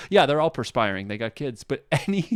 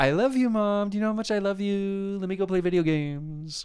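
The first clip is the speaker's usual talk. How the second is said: high put-on child voice, coaxing and sweet; 7 semitones higher than usual. Retelling how a typical kid sweet-talks a parent: imitating a typical kid. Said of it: "That sounded like typical kid, like".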